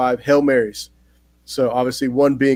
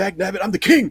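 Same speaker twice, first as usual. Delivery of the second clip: indignant huff, pitched up high; 7 semitones higher than usual. Acting out a movie monster fed up after being tricked: imitating an indignant Godzilla. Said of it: "that's just how his attitude was".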